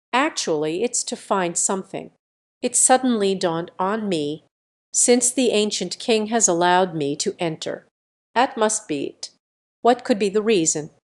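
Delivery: plain reading voice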